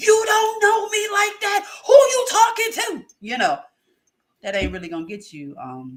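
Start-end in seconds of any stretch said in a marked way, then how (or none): 0.0-3.1 mock very high, loud, worked-up emotional outburst. Giving advice, acting out a bad reaction: imitating an emotional outburst. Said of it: "instead of being all emotional and be like".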